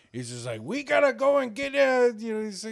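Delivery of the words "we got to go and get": loud, high, slow, belted funny cartoon voice. Describing a favorite cartoon show, doing a funny Master Shake voice. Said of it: "he just had a funny-ass voice".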